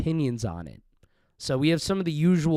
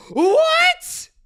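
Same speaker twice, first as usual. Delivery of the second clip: very fake, high, drawn-out surprised "what"; 7 dB louder than usual. Imitating podcast guests reacting, a fake surprised "What?". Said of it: "in a very fake way".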